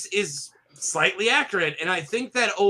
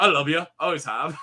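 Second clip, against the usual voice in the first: put-on Scottish accent, lower pitch; 4 semitones lower than usual. Retelling a comedy scene, quoting a line: imitating a Scottish accent. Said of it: "He just do Scottish quotes".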